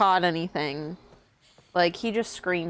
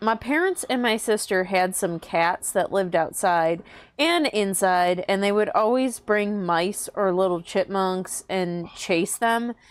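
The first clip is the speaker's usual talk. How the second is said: plain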